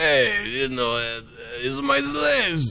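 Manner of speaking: put-on big bug-character voice. Retelling what a big bug character says: imitating a big bug guy. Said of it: "I didn't know you could do that voice".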